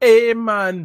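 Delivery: poor put-on Jamaican accent. Joking that a friend with dreads should talk like this: bad put-on jamaican accent. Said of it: "badly says Jamaican stuff".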